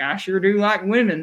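put-on Missouri accent. Imitating a movie character's lines: Leo Southeast Missouri accent impression. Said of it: "he got the accent down and everything".

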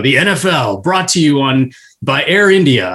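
very deep football promo voiceover voice. Imitating an NFL promo guy's line: deep NFL promo announcer voice. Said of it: "with that real deep voice who's like".

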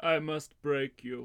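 put-on dramatic villain voice. Asked to sign off the show, [name] delivers a Dolph Lundgren impression. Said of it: "that's more Creed 2 Dolph Lundgren".

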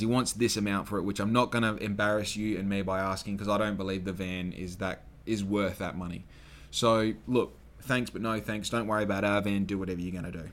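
normal talking voice

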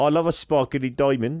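terrible South African accent slipping into Brummie. Speaker attempts an accent, admitting it is terrible: bad South African accent. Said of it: "I can't do the accent".

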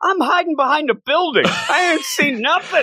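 put-on, very high, shrill, swooping yell. Retelling a reporter's reply when asked about a kaiju: imitating a reporter yelling. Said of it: "He's yelling".

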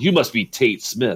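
put-on stern Irish accent, male voice. Retelling how a glaring man with a roll call sheet greeted him: imitating a stern Irishman. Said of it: "there's this stern Irishman".

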